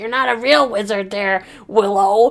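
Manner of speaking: put-on cross, cranky, angry eighty-year-old grandma voice. Discussing a show, acting out Sorsha's words to Willow; mock-angry grandma Sorsha voice. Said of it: "Why does she sound like an eighty-year-old grandma, an angry grandma?".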